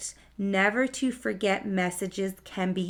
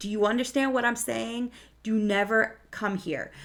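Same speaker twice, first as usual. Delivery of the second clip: put-on frightened adult voice, earnest and serious; 2 semitones higher than usual. Retelling a warning to Jacob: imitating a scared adult. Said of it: "a scared adult is saying to Jacob".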